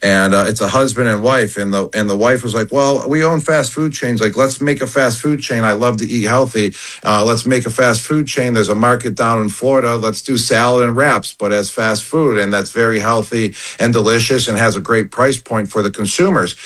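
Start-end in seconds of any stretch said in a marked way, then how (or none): none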